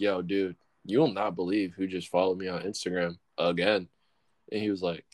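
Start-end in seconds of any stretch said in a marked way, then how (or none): none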